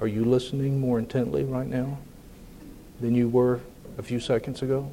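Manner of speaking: hushed, very quiet, low speaking. Explaining emphasis by dynamics to listeners, dropping to very quiet speech. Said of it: "if I talk like this all the time".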